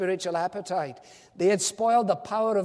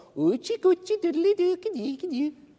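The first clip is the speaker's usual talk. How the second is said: put-on very high, sing-song, swooping cooing baby talk; 10 semitones higher than usual. Speaker acts out people putting their heads into prams, baby talk. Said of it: "They're talking baby talk".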